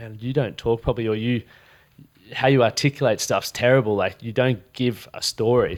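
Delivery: ordinary talk, nothing marked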